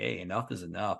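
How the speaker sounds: normal talking voice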